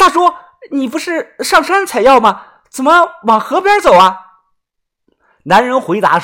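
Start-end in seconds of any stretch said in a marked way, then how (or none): 0.0-4.2 anxious, pressing, suddenly raised urgent voice. Xiaoxuan calls after the departing man, voice suddenly raised, urgent. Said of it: "声音陡然的提高啊，急切的问道".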